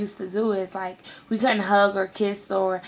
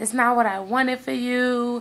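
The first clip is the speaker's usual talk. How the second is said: put-on tearful crying voice, pitched higher; 4 semitones higher than usual. Retelling a phone call where the sister was crying: imitating sister crying. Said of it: "she just was basically crying, like".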